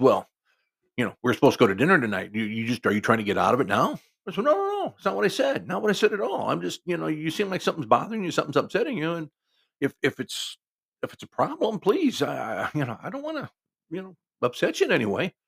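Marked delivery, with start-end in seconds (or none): 0.0-4.0 put-on snarling. Retelling what a woman said when she got mad at him, imitating her snarl. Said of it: "kind of looks at me and snarls and she says".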